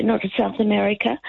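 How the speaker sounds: ordinary talk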